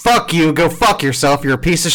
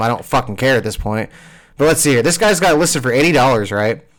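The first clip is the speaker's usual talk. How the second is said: usual speaking voice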